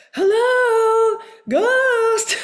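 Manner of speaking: very high, loud yell with "hello" drawn out. Imitating a ghost hunter yelling at ghosts as if they can't hear: Steve Gonzalez yelling impression. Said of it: "He would yell at them".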